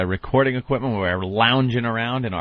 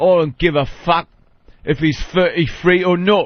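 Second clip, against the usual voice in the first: put-on London Cockney accent, pitched up; 6 semitones higher, 4 dB louder than usual. Showing the others how that accent sounds, in a Cockney accent. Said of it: "where they talk like this and say".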